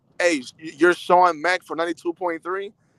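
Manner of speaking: usual speaking voice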